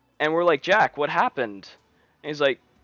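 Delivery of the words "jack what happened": ordinary delivery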